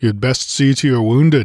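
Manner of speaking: grunting. Conan speaks to him while turning away, grunted. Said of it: "grunted Conan".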